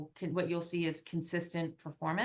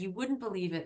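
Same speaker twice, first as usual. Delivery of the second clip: put-on very posh voice; 2 semitones higher than usual. Quoting what a gentleman friend said to her, imitating a very posh voice. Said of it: "he said it in his very posh voice".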